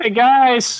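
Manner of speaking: quick, high-pitched yell. Playing Edward calling out to the others: quick yell. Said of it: "Edward really quickly yells".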